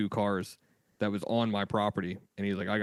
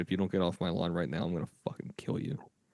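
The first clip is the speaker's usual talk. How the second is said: mock whispering voice; 3 semitones lower than usual. Retelling what was whispered to a neighbor: retelling a whisper. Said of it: "I whispered to the guy".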